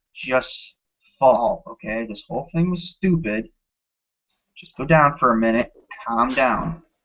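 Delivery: hushed half-whisper, right in the ear. A game master voices the one holding a sword to the player's neck: half-whispering in your ear. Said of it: "he leans down and whispers in your ear".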